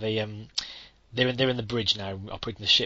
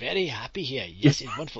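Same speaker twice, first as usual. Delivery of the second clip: put-on Indian accent, exaggerated and laid on thick. Chiming in to imitate how he talks to passengers, put-on chai-wallah accent. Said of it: "the most effective kind of Charwaller accent".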